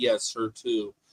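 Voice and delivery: very low, quiet, dry deadpan. Praising english comedy, quoting a line from a british sitcom, mock-deadpan line. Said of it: "that kind of deadpan".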